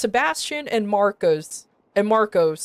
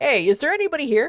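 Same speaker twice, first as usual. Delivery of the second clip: called out lightly, pitched high; 5 semitones higher than usual. Retelling how the leader of the group started yelling, imitating his yell. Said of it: "he started yelling".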